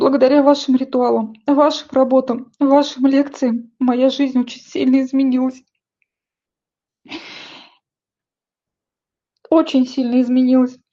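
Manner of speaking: crying while speaking. Addressing heartfelt thanks to someone, crying while speaking. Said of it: "простите, что я плачу".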